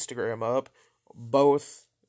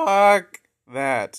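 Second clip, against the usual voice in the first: very loud, high outburst, voice cracking mid-word; 7 semitones higher, 10 dB louder than usual. Speaker talking to an audience, voice cracking. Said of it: "Anyone else just hear that voice crack?".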